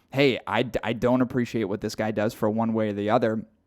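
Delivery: ordinary delivery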